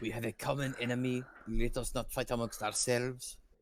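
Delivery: whispered voice. Speaking in character through a window: whispering. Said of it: "I whispered in the window".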